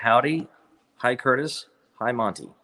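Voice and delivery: ordinary talk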